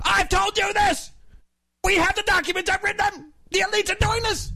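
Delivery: very high, strained, shouting rant. Told the impression is pretty good, the speaker does it again: a shouting Alex Jones impression. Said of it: "blow out your voice".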